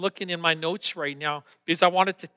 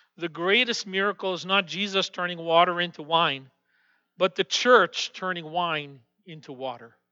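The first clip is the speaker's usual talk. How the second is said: ordinary talk, nothing marked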